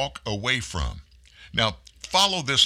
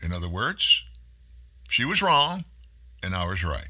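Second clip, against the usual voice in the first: ordinary delivery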